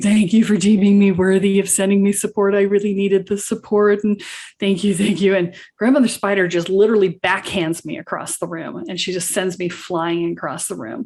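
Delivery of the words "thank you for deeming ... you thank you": re-enacted tearful, crying voice. Recounting a story, the speaker acts out their past self in tears: retelling tearful thanks. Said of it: "I'm just in tears going".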